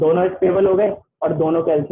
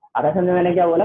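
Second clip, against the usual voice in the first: usual speaking voice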